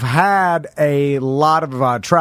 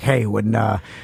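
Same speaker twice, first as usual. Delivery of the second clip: put-on creepy, grumbly voice with Miami accent. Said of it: "your voice got oddly creepy and grumbly when you did that".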